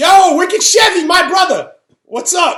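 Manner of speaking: high, loud shouted voice.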